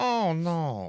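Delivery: very high-pitched, comic delivery. Doing the "oh no" line from Running Scared: Billy Crystal impression. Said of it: "slipped a little bit into Billy Crystal from Running Scared".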